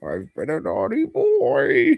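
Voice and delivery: put-on very high, sing-song, swooping dirty old man voice. Debating how a comic character sounds, the speaker does Uatu as an old pervert. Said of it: "He sounds like an old pervert".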